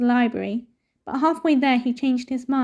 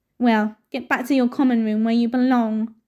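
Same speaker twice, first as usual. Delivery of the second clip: curt, sharp snapping tone. Reading a story aloud, a character orders a boy back to his room: snapping. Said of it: "snapped Filch".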